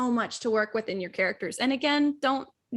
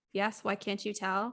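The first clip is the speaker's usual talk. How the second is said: flat robotic voice, quieter; 3 semitones lower, 6 dB quieter than usual. Retelling an answer to an ex-boyfriend: imitating own robotic voice. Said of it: "In your robotic voice".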